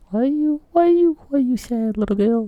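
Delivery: very high, fast, sweet cooing voice.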